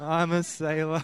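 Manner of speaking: soft, slow, sheepishly shy mumble. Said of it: "like, sheepishly shy".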